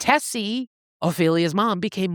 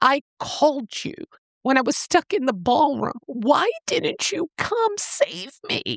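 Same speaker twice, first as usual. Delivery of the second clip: high-pitched, exasperated tone. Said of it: "She's basically exasperated. She's like".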